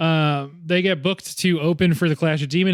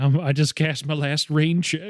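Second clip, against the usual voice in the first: put-on Southern accent, slower. Quoting a line she says, done in a Southern accent. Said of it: "she does like the Southern accent and says like".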